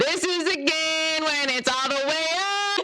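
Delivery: full-on high-pitched screaming into the mic. Testing a very sensitive microphone: screaming.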